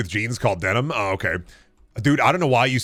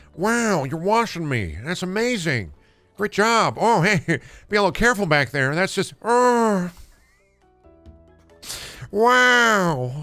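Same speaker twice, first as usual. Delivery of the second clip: slow, pitched-up voice with each "wow" drawn out; 7 semitones higher than usual. Imitating a cartoon car being power washed: Owen Wilson voice. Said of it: "That's Owen Wilden?".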